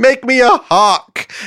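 calling out, high, slow and loud.

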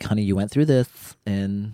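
put-on woman's voice. Telling an interviewer what their mom said, imitating mom's voice. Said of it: "why is that my mom's voice".

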